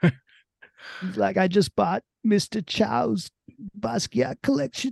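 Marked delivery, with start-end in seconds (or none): 1.4-4.9 very high, put-on, bragging character voice. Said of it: "almost turning into [name] voice".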